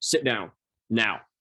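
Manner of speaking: stern, authoritative, commanding tone of voice. Retelling what a therapist said after being called back: imitating an authority figure. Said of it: "sounded like, like my dad or my mom, like authority figure".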